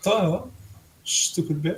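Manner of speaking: muttering under one's breath. As a woman walks away, muttered under breath. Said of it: "I say that underneath my breath".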